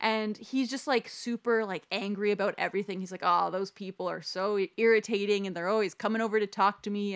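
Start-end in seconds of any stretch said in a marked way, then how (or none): none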